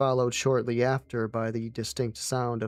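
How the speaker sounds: plain reading voice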